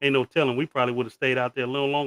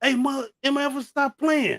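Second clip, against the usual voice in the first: very high shout; 13 semitones higher than usual. Retelling sitting in a shaking car and screaming back at friends: imitating own scream. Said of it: "so I scream back".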